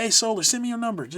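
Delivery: mock, high-pitched yelling, repeated over and over. Retelling a voice chat where others talked over him, retelling a scream. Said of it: "I'd start screaming that, just yelling".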